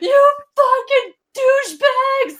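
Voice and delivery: shrill, very high-pitched, loud scream. Imagining screaming from a jail cell, put-on screaming. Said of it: "Like, screaming".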